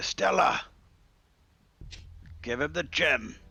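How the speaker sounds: imperious, bossy, commanding tone. A character ordering someone to give Devion the gem: commanding.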